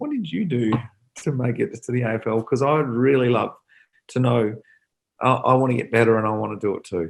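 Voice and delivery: meek, weak, insipid little voice. Retelling own question about making the AFL: weak, meek, insipid voice. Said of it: "in a little weak, meek, insipid voice".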